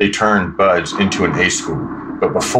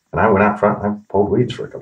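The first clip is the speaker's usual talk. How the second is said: ordinary delivery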